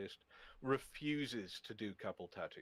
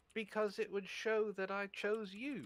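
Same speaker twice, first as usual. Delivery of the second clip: put-on very cute voice, much higher; 12 semitones higher than usual. Quote her answer to why you would get a Pokeball tattoo, imitating the cutest voice. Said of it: "she goes in the cutest voice".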